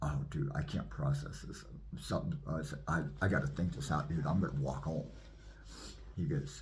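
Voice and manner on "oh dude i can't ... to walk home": ordinary talk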